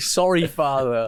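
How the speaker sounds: loud shout, pitched high. Recounting a dream where the father screamed at them, retelling a shout. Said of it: "I was shouting".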